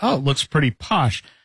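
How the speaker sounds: ordinary talk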